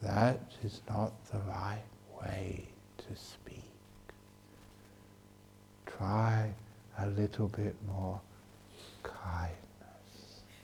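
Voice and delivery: very soft, slow, gentle, patient coaxing tone. Demonstrating how to answer someone harsh and angry, in a very soft voice. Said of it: "you talk to them very softly".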